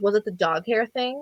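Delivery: needling sarcastic tone. Retelling what an ex said when she ended it: imitating a sarcastic tone. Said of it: "sarcastic about it".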